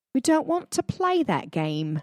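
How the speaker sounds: bad fake British accent. Quoting a refusal from an ally, done in a horrible british accent. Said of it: "I do a horrible British accent".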